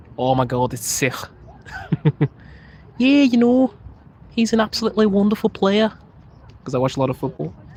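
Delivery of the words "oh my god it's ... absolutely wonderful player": put-on Scouse Liverpool accent, pitched up. Explaining how people from liverpool say a word, in a liverpool accent. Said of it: "like how people from Liverpool don't say sick".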